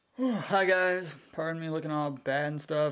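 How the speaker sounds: sleepy, drowsy, just-woke-up voice. Greeting viewers at the start of a video, just woken up, sleepy. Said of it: "so I'm kind of sleepy".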